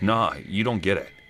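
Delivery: put-on frustrated tone, mock exasperation. Retelling a friend's reply after being called a good friend, mock-frustrated. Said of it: "in a way that sounded frustrated".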